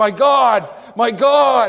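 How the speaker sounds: very slow, huge, booming megaphone-like cry. Explaining the greek word megas, acting out the cry: huge megaphone-loud cry. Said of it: "as if he held up a megaphone and said".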